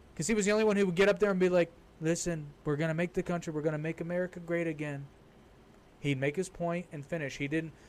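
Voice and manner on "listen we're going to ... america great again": plain, blunt, unpolished delivery, like a normal guy. Retelling how a candidate talked at debates: imitating Trump talking plainly. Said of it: "talked like a normal human being".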